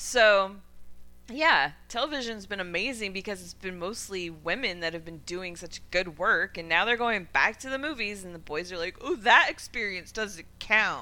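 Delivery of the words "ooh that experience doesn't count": slow, smug dude bro voice. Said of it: "I love when [name] puts on her dude bro voice".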